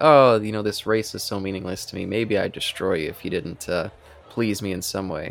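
ordinary talk, nothing marked

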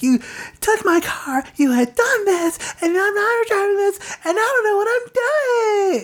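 put-on grating, annoying, very high valley girl voice. Speaker mocks a movie character recapping a scene, in a most annoying voice. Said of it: "she does it in this most annoying voice".

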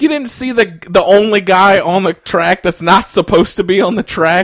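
incredulous, mocking tone.

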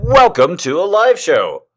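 booming, very loud, drawn-out announcer voice. Opening a live show as its host: put-on recording voice. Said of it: "I've put on a recording voice so that you know that it's a show".

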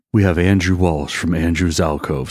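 mock, playfully seductive, sultry, sensual voice. Introducing a guest, in a mock sensual voice. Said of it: "Should I talk in my sensual voice".

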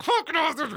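very high, hushed, forced through clenched teeth. Retelling his outburst in that moment, the speaker reenacts it: said through teeth. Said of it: "it was said through my teeth".

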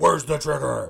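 very high scream at full volume.

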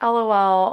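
ordinary talk, nothing marked

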